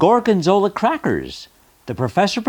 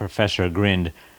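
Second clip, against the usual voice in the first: usual speaking voice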